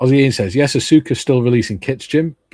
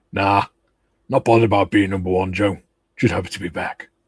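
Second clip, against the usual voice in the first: goofy, daft, silly man's voice; 2 semitones lower than usual. Host reads out a message from Tiff, daft voice for Tiff. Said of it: "a daft man's voice for Tiff".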